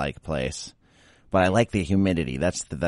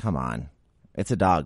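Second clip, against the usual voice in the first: ordinary talk, nothing marked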